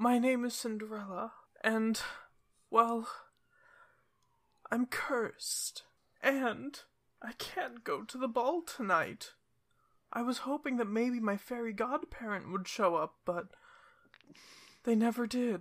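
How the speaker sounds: tearful. A storyteller voices a tearful character meeting the players; sad Cinderella voice. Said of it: "They seem quite sad".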